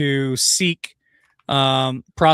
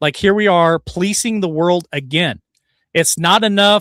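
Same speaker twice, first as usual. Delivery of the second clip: ordinary talk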